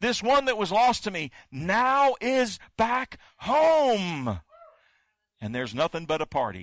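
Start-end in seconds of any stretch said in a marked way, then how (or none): 0.0-4.4 mock high, slow, ringing shout, "home" stretched out. Retelling the father welcoming the lost son back home: acting out a shout. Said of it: "he shouts and he yells".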